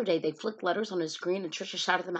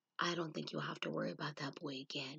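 gentle, very hushed and quiet voice; 3 semitones lower, 12 dB quieter than usual. Mr. Falker, back from the office, speaks to Trisha, said softly. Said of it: "he said softly".

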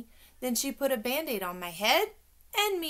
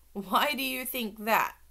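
usual speaking voice

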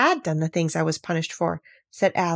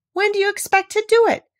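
very high voice, stifling a laugh; 13 semitones higher, 5 dB louder than usual. Alice asks the queen, trying not to laugh. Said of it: "feeling very much inclined to laugh".

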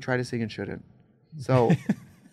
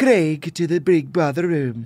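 put-on British accent, slow and loud, name pronounced British way; 3 semitones higher, 7 dB louder than usual. Saying the name the other's way, as announced on Big Brother: imitating the other's accent. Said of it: "that was actually perfect".

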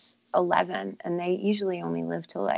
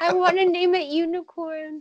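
put-on little girl voice, begging, higher and louder; 11 semitones higher, 5 dB louder than usual. Playing the child asking a dad for a pony: imitating a little girl pleading. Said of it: "Be like".

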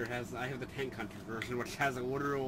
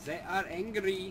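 clumsy put-on German accent, pitched up; 7 semitones higher than usual. During an online match, a player reports on the enemy team in a bad German accent. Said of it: "attempting to do a fucking bad German accent".

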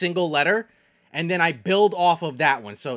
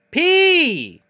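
thrilled cry, very high, very loud, excited; 12 semitones higher, 9 dB louder than usual. Repeating a syllable after the teacher: excited. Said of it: "Why did I sound so excited like that?".

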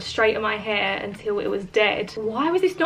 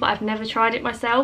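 ordinary delivery

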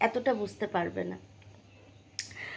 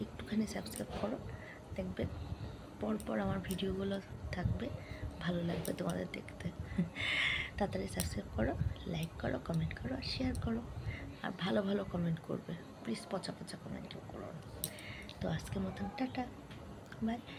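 very soft whisper. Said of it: "কথা বললে ও উঠে যাচ্ছে".

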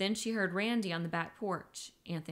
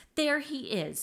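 gloating, triumphant, told-you-so tone, pitched up; 6 semitones higher, 3 dB louder than usual. Having called Alice over, a woman points out the man, triumphantly. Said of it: "she said triumphantly".

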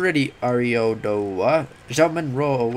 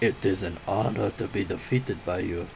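low, slow, clumsy, hammy put-on character voice; 5 semitones lower, 7 dB quieter than usual. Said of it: "really bad impersonation of that voice".

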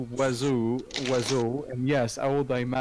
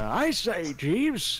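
put-on pitched-up, adventurous old gentleman explorer character voice; 6 semitones higher than usual. Showing off the character voices they can do, a speaker tries: old adventurous man voice. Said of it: "a little bit like the old adventurous man".

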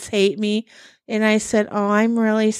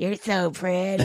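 put-on sleazy elderly man voice; 5 dB quieter than usual. Retelling what a man said as he touched her face, creepy old man voice. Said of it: "Like in his creepy old man voice".

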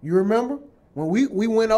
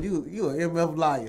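ordinary talk

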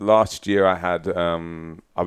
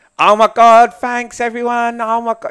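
very loud, high-pitched, slow, drawn-out, belted voice; 9 dB louder than usual. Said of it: "Adele's like".

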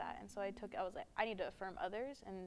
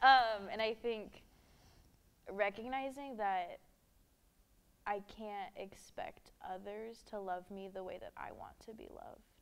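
emotional, emotion-laden voice, said louder; 6 dB louder than usual. Opening up about past body trauma and feeling unlovable, getting emotional. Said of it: "I'm getting emotional".

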